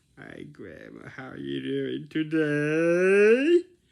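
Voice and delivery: silly, very loud, high-pitched voice, "today" stretched. Greeting grandma back when she says hi on a visit, in a silly tone. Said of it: "you talk in this tone".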